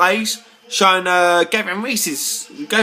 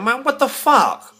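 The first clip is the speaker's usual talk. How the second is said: emotional, worked-up, pitched-up outburst; 5 semitones higher than usual. Complaining about a commentator's remarks, getting too emotional. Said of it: "I'm getting too emotional now".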